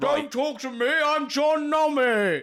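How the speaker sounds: yelling loudly. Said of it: "I'm shouting now!".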